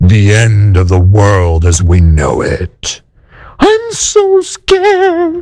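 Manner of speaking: put-on low, ominous voice of doom. Mocking the fear about the end of the world: put-on ominous doom voice. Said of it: "say it with an ominous doom voice".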